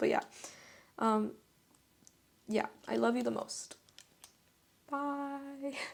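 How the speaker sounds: choked-up, close to tears, bye drawn out. Signing off after making flowers together, emotional, near tears. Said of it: "I just made myself so emotional".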